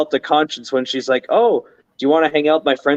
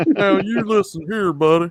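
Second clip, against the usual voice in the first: put-on Texan accent, cartoon dad character voice; 5 semitones higher than usual. Told by another speaker they sound like Hank Hill, trying a Hank Hill impression. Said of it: "ever told you you sound like Hank Hill?".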